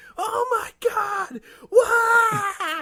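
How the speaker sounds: high, slow screaming in horror. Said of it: "some woman is just standing up screaming in horror".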